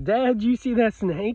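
put-on high-pitched little girl's scream. Retelling how a snake came close: imitating a child screaming. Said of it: "she was screaming at me".

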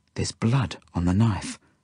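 ordinary delivery

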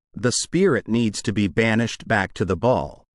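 ordinary talk

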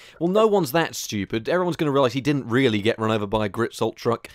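plain

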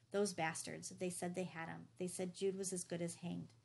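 ordinary talk

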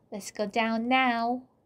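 ordinary talk

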